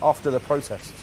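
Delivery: ordinary delivery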